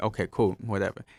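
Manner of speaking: normal talking voice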